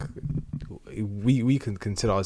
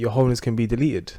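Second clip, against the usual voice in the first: normal talking voice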